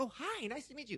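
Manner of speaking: niceness laid on thick. Retelling meeting a stranger at a store: imitating own overly nice greeting. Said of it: "overly nice".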